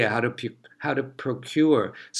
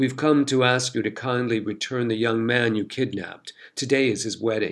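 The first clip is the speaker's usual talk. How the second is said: plain reading voice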